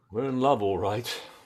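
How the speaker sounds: soured with bitterness. Admitting to the other that they are in love: said bitterly. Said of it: "don't say it so bitterly".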